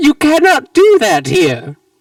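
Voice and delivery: high, loud, swooping cartoon villain voice. Voicing the character whose voice echoes in the listeners' heads, Professor Doofenshmirtz's voice. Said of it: "Professor Doofenshmirtz's voice echoes in your heads".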